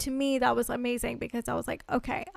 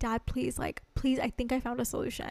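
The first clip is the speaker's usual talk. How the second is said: begging, pleading, quieter; 5 dB quieter than usual. Retelling how they pleaded with Dad for help: imitating own past begging. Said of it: "begging my dad".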